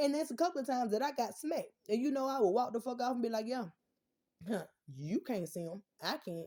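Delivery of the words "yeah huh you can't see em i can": slow, drawled, taunting, sarcastic voice. Retelling walking off from mom after being told to shut up: imitating own sarcastic retort. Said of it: "I would be very sarcastic with it".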